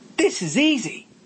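very high-pitched exclaimed line. Narrator reading a character's line as he makes his way down the line, exclaiming. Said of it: "exclaimed Joel".

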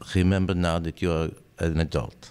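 put-on accent from Israel. Quoting advice the listener's father once gave, imitating the father's accent. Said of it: "I'll bastardize your dad's accent".

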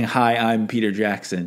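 ordinary delivery

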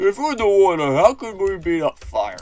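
botched voice pushed up high and loud. Speaker quotes Patrick's line about being on fire underwater: bad Patrick impression. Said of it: "I can't do Patrick's voice".

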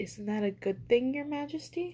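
wary, cautious, tentative, careful delivery. A rabbit puts a question to the bored lion king, cautious. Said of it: "Cornelius asked cautiously".

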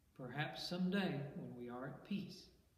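usual speaking voice

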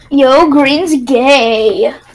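put-on teasing voice. Teasing another player while gaming, imitating Crystal's voice. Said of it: "Just because I'm doing the voice doesn't mean I'm Crystal".

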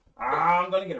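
cackling laughter. Voicing a creature climbing up a pipe toward a player: cackling. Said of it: "he's cackling on the way up".

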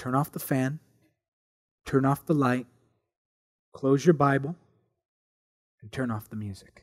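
very low, hushed, gentle, soft, polite voice. Speaker recounts a voice answering a desperate prayer, retelling a gentle, polite voice. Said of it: "a very gentle voice gave a very polite instruction".

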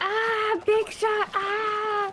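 high, loud, excited yelp. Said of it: "That's my reaction when I see a big shot".

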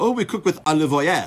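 high, loud put-on French waiter's accent. Retelling a restaurant exchange, voicing the waiter's reply in his french accent. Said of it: "His French accent".

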